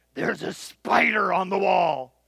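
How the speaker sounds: low, throaty, rough, rasping guttural voice. Quoting a woman who grabbed the speaker's arm, in a low guttural voice. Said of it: "in a low, guttural voice".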